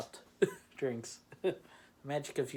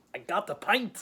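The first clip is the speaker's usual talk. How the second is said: put-on very loud, terrible half Scottish, half Irish accent; 9 semitones higher, 8 dB louder than usual. Joking to Lord of the Rings lovers about a pint: terrible half Scottish, half Irish accent. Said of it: "Forgive my terrible accent".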